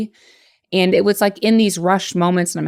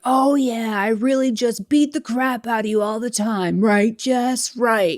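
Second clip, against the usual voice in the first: mock, half-voiced, high, mild yell; 5 semitones higher than usual. Retelling what the ex was yelling at the house: imitating someone yelling. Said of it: "I could hear him yelling".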